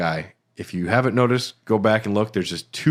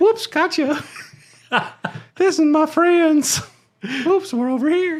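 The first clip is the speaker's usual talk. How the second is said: very high, sinister cartoon old man voice. Performing a voice presented as cut audio from the game, in an old man from Family Guy voice. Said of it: "You sound like the old man from Family Guy".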